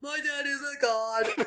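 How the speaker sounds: slow, dim-witted, brutish put-on voice. Recounting playing her character in a game, dumb brute Hercules voice. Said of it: "a brute with little to no brain activity".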